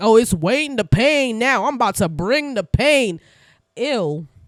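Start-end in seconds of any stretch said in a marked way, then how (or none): 0.0-3.2 cheesy, corny hype-man catchphrase delivery, boastful. Retelling a cast member's corny transition moment: imitating Wayne. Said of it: "and he's like".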